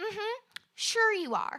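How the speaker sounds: acted, slow, sarcastic, dismissive, unconvinced tone. Retelling what a passerby replied to an apology: imitating a dismissive woman. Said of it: "just looks me up and down".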